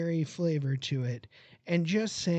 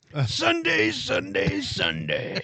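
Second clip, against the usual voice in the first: loud, hyped-up, swooping monster-truck rally announcer voice; 5 dB louder than usual. Asked to read a beer can label in a monster truck voice. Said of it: "read it in your monster truck voice".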